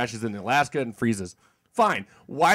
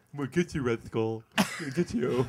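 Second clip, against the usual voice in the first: put-on lisp, lower and quieter; 3 semitones lower, 7 dB quieter than usual. Mocking the hero's line from a film: lisping Captain America voice. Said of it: "He's totally got a lisp".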